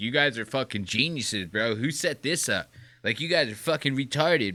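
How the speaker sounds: put-on condescending voice. Retelling how Hassan Piker talked down to hosts: imitating condescending Hassan Piker. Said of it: "Hassan is the most condescending prick".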